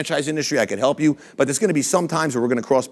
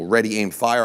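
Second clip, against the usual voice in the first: ordinary talk, nothing marked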